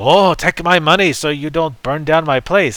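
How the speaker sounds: failed put-on Italian accent. Acting out a store owner paying protection money, attempting an Italian accent. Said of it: "I was trying to sound Italian".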